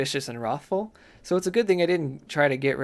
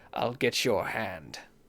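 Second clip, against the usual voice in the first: low, hushed, demon-like voice; 4 semitones lower, 5 dB quieter than usual. Narrator reads a scruffy-looking soldier's line: voice like a demon. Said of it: "voice like a demon".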